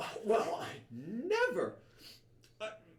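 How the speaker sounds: very high, slow, swooping, affronted lady voice. Voicing a woman who bounced off a player: offended thin woman. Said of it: "she goes like".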